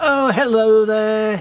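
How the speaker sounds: squeaky high voice. Retelling what a local lady said when she picked up: high squeaky voice. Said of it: "high squeaky voice".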